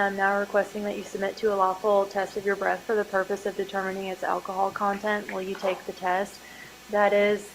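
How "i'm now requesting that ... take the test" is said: ordinary delivery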